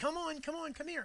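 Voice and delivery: very high, eager, excited yell. A speaker shows how to call a dog to come: excited yell. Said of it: "yell excitedly".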